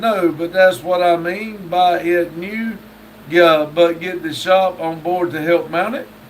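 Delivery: ordinary talk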